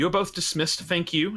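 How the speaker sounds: loud, projected delivery. Game master voicing a lady dismissing two visitors, said loudly. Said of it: "and she says it loudly".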